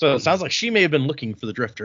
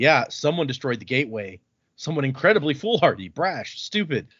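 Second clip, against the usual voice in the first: ordinary talk, nothing marked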